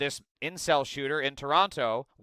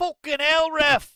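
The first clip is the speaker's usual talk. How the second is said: very high put-on Scottish accent; 13 semitones higher, 4 dB louder than usual. Repeating a shouted line from a clip just heard: imitating a Scottish accent. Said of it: "I guess that's a Scottish accent?".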